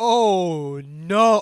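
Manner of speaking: horrified groans.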